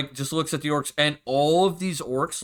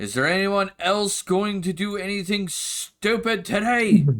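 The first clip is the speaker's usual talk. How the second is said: woman's voice calling out, much higher; 6 semitones higher than usual. Narrator voices a woman heard calling out to the players; female voice calling out. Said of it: "you hear a female voice call out".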